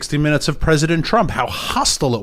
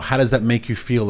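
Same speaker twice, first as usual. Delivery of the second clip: plain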